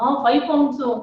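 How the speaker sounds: plain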